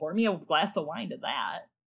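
put-on gleeful queen voice. Acting out a character's reaction to a death: imitating Cersei, gleefully happy. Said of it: "she's loaded happy".

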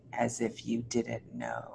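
very quiet, very deep growling voice. Retelling what a man's voice in the kitchen said, in a very deep growly voice. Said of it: "say very deep and in a growly voice".

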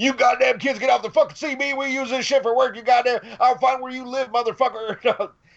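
very high, raging, angry cursing yelling. Retelling how a trucker on the CB radio threatened them: imitating a trucker yelling. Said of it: "this trucker started fucking yelling".

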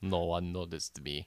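put-on low, soft Russian accent. Playing the guy with Russian tattoos on the Grand Prix sidelines, Russian accent. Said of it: "we're doing better Russian accents".

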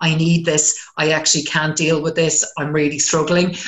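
plain

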